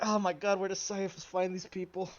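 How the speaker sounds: mumbled, grumbled aside to oneself. Narrating a game character's reaction to another character's remark; muttering under breath. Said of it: "her muttering like".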